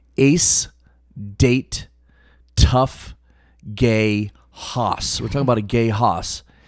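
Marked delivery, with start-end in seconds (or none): 0.2-5.2 slow, word by word, gaps between words. Reading a phrase aloud for listeners to figure out, each word separate. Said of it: "all words separate".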